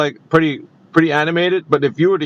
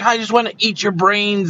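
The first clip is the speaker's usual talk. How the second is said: irate, ranting scream outburst; 4 semitones higher than usual. Speaker retells a man going irate, retelling his irate scream. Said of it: "screaming at the top of his lungs".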